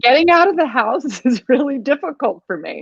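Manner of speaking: speaking while laughing hard. Explaining to the other speaker why bravery matters, laughing while talking. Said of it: "I'm crying because I'm laughing so hard".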